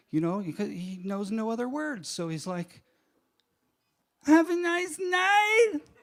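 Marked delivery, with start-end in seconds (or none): 4.2-5.7 very high, raised, drawn-out, wounded, bewildered. Acting out a man who knows no other words, mock betrayed and confused. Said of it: "with all the betrayal and confusion in his voice".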